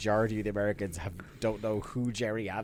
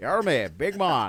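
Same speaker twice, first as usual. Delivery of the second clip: put-on Northern Irish politician voice, higher and louder; 5 semitones higher, 6 dB louder than usual. Repeating a wrestler's line as a Jerry Adams impression. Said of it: "Jerry Adams in body paint".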